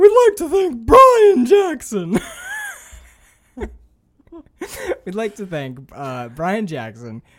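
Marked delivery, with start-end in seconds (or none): 0.0-2.2 loud put-on voice cracking on every phrase. Show host demonstrates how patron shout-outs will sound: cracking put-on voice. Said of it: "whose voice always cracks".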